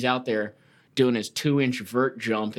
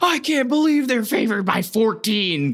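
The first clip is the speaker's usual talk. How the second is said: put-on scream, higher and louder; 11 semitones higher, 5 dB louder than usual. Retelling how a gambling podcaster reacts to a betting line: imitating Doggy Juice screaming. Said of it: "screaming into the mic".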